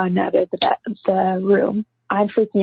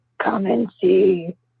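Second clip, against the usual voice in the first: ghostly, growly, disembodied voice. Recounting a voice heard on video answering friends, imitating a growly disembodied voice. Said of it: "in this disembodied voice that's really growly".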